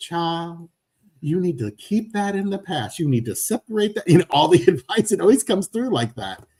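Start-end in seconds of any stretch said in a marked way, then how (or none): 0.0-4.1 put-on southern accent in a small woman's voice.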